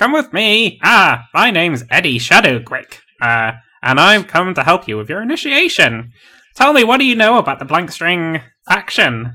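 high, swooping, sing-song scruffy pirate voice. Game master voicing a halfling greeting the players, Eddie Shadowgrick halfling voice. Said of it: "it's a halfling. It's a male halfling, and he is carrying quite a large axe on his back, and he's dressed a bit like a scruffy pirate. / it's a halfling. It's a male halfling, and he is carrying quite".

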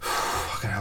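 out of breath, soft, winded sigh.

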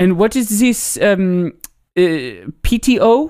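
very slow, drawn-out, affected put-on French accent. Retelling a TikTok skit, the French recipient asks: imitating a French accent. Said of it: "an affected, like, a French accent".

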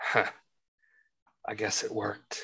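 very quiet whisper. Whispering a line into another character's ear: whispering in character. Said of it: "I whisper into his ear".

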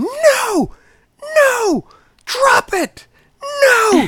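very high, very loud, very slow swooping shriek. Retelling a lady in the street screaming at her dog: retelling a woman's screaming. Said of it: "she's just screaming".

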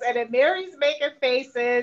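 normal talking voice

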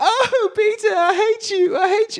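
put-on British accent, very high-pitched and drawn out. Retelling what a character said to Peter, in a British accent. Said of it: "I don't know why I'm saying in British".

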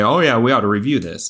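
mock-sarcastic delivery. The speaker quotes their own earlier suggestion, retelling a sarcastic remark. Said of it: "in pure sarcasm".

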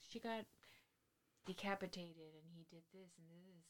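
very hushed, calming, very soft reporter-style narrator voice. Describing a narrator who tells creepy stories, imitating a soothing narrator. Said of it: "his voice is just so soothing".

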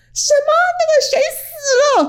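put-on loud, shrill, very high-pitched scream. Retelling how a reporter sitting behind them screamed, retelling a loud scream. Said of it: "很大声的尖叫".

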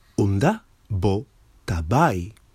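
ordinary delivery

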